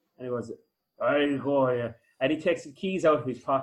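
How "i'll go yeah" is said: put-on very drunk man voice. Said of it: "as pissed as you will ever fucking come across".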